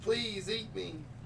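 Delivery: put-on very high, tiny little girl voice. Describing a message they want to send, speaker uses a little girl voice. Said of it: "In the voice of the little girl in the tower".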